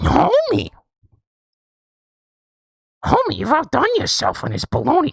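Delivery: cartoon voice going way up, swooping. Doing a requested impression of Marge Simpson eating a bologna sandwich: Marge Simpson voice. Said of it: "I would like to hear one Marge Simpson".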